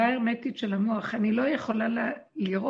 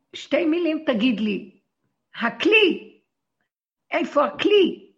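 high, loud shout across a room; 5 semitones higher, 7 dB louder than usual. Speaker retelling her answer when someone asks where a tool is, retelling her shout. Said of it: "ואז אני צועקת".

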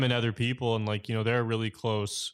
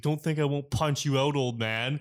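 acted-out menacing voice, higher pitch; 4 semitones higher than usual. Retelling a heated moment, quoting Derek threatening an old man; imitating Derek threatening. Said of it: "Derek finally stands up. He's like".

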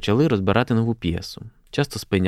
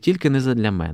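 usual speaking voice

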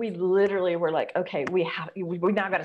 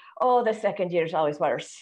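put-on Irish brogue accent. Retelling what a cousin said in Ireland, in an Irish brogue. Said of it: "I got to do the brogue".

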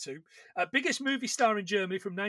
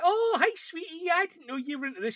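exaggerated over-the-top camp sweetness, very high; 9 semitones higher than usual. Describing a film scene where a paid stranger pretends to know Peter: over-the-top camp voice. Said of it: "Really, really over-the-top kind of homosexual".

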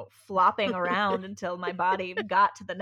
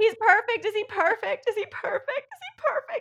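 yelling, higher pitched; 4 dB louder than usual. Retelling a birth, imitating own past yell to Joe: retelling a yell. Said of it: "I just yelled to Joe".

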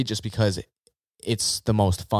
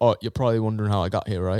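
put-on British accent, way too British. Told to channel Chris Hemsworth in a fourth-wall-breaking moment, do a too-British Chris Hemsworth impression. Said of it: "That sounds way too British for him".

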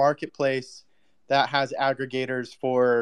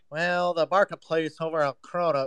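put-on stuffed-up nasal nerd voice; 4 semitones higher than usual. Mocking another speaker's explanation: imitating Texas's nerdy nasal voice. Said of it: "and then you're like".

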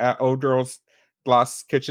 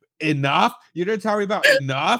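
high-pitched, loud yelling; 6 semitones higher than usual. Recalling an argument about J-Lo movies, speaker is retelling own yelling at the listener. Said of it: "I started yelling at you like".

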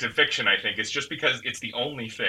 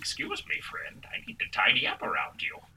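thin, wispy, airy whisper; 8 dB quieter than usual. Narrating a story, a bark-covered creature addresses the listener in a wispy whisper. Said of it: "A wispy voice whispers".

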